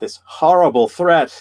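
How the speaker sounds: dripping with sarcasm. Commenting on a politician's stance, mocking a claim: sarcastic tone. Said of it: "I'm saying that sarcastically".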